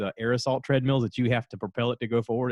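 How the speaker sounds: plain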